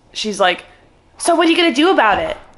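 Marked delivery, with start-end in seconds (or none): 1.2-2.4 loud, high-pitched yelling. Recounting what a woman yelled at the speaker, retelling her yelling. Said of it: "as she's yelling at me".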